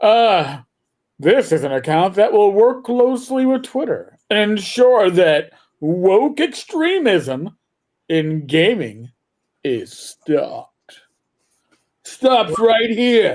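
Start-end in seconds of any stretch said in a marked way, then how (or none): 1.2-13.4 put-on announcer-style radio DJ voice. Reading out the next comment, the speaker puts on a DJ voice. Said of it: "I'm trying to get my best my best D J voice on".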